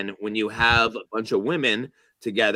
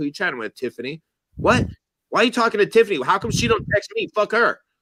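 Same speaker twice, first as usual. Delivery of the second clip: put-on very high, rising, heated angry rant; 10 semitones higher, 3 dB louder than usual. Retelling a girlfriend's reaction to texting a friend: imitating her getting mad. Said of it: "you're getting mad".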